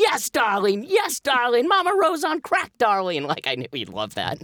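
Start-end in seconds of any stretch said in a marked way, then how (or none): 0.0-3.2 very high, full-throated screaming rave. Retelling how a collaborator reacted to a pitch: imitating someone screaming. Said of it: "he started screaming".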